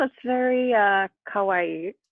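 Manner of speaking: put-on strong American accent. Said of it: "in the most American accent I could".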